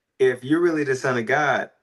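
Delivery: ordinary talk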